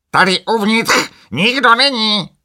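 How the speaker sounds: very high, very loud, squawking shrill parrot croak. Narrator reads the parrot Sokrates answering from inside the wagon: Sokrates the parrot croaking. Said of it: "zaskřehotal papoušek".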